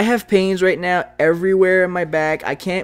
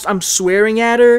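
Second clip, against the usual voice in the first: plain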